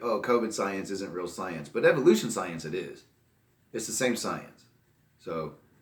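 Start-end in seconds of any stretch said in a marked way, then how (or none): none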